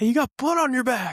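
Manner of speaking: very high, urgent-sounding, high-pitched yell. Retelling a race when dad on the sideline spotted blood: imitating a yell. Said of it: "he's, like, yelling at me".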